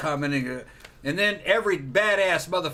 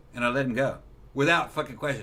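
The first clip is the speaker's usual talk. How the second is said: usual speaking voice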